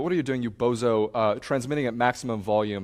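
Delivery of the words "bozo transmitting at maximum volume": normal talking voice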